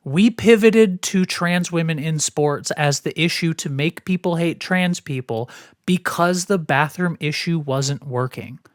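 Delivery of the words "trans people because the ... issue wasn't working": ordinary talk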